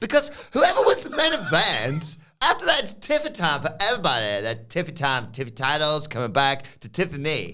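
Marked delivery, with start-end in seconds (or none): 0.0-4.4 preposterous, very high sing-song voice swooping way up. Retelling how Fallon Henley walks in and speaks, in a preposterous Fallon Henley voice. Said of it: "in this preposterous voice".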